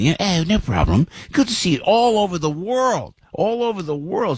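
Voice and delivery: put-on broad English accent, laid on thick. Retelling a trip in Italy, the speaker quotes a guy's reply: thick English accent. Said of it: "with a real thick English accent".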